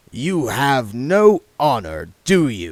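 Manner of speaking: slow, even, composed, infuriatingly calm voice. A father speaks to his son William, infuriatingly calm. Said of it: "said his father, / said his father, / still in the voice of infuriating calm".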